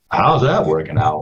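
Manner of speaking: acted-out skeptical, sarcastic tone. Retelling what an MC asked about the new music: imitating a sarcastic question.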